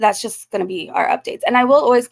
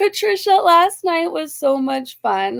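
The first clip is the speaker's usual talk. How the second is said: openly delighted, joyful, happy tone, pitched up; 6 semitones higher than usual. Addressing someone about last night's fun, sounding joyful. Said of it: "can you hear the joy in my voice?".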